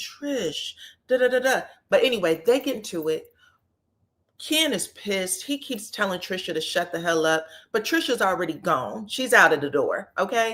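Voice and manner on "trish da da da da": slow, gentle, soothing, placating voice. Retelling how someone tried calming a fighting partner: imitating a soft calming voice. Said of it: "he's doing this soft voice thing".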